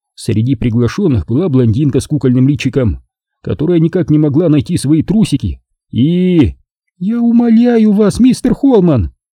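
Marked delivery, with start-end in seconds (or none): 7.0-9.2 very high, scoffing, mocking exclamation. A woman interrupts the narrator's explanation, mocking exclamation. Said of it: "с издевкой в голосе воскликнула Нина".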